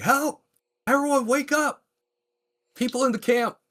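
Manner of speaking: shrill, very high, urgent shouting. A player's character drops her crossbow and calls out to the camp, shouting for help. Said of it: "she just starts shouting".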